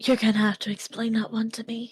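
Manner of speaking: whispered reply. Retelling what another person whispered back in a side conversation, retelling a whisper. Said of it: "Sage whispers back".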